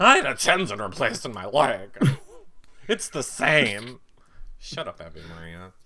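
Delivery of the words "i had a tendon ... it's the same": loud, mannish voice pushed out. Retrying the contestant's line in a man voice, imitating Abby Maria. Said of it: "She's more of, like, a man voice".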